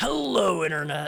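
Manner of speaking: loud, high, gravelly announcer host voice. Showing what vocal shredding sounds like: gravelly MatPat voice. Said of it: "how Matt Pat says".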